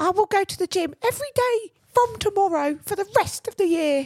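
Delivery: put-on drunk London accent. Mocking people's drunk midnight New Year's resolutions, in a mock-drunk London accent. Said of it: "whenever you do an accent, you go like London pigeon vibes".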